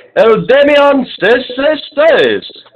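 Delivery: very high-pitched announcer-style voice. Introducing the name of a personal favorite in best announcing voice. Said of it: "in my best announcing voice".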